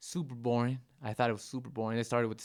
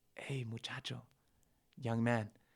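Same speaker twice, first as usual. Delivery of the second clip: put-on hushed, soft old man's half-whisper; 6 dB quieter than usual. Recounting an elderly man beside the speaker at midnight, retelling an old man's half-whisper. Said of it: "he whispers".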